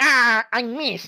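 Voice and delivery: high, cartoonish villain whine. Redoing a line after being asked: Wario voice. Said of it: "It's a pretty good Wario".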